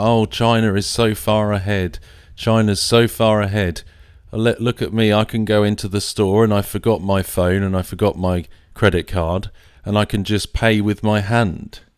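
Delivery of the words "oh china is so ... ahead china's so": usual speaking voice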